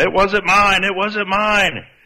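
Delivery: mock shrill, very high-pitched, drawn-out shouting. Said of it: "she's yelling".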